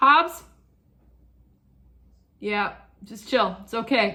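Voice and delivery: loud, drawn-out yelling. Speaker breaking off to yell at their barking dog. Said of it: "I don't know why I'm yelling".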